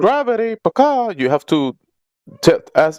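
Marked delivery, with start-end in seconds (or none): 0.0-1.1 very high, bird-like put-on parrot voice. Mocking another speaker for repeating a word: parrot voice. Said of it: "saying gravity like a parrot".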